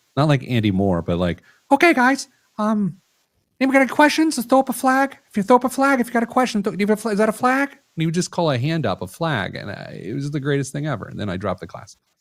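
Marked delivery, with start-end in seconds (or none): 1.7-7.7 very high voice, way up top. Recalling a man from a dropped banking class, imitating his real high voice. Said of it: "he had a real high voice".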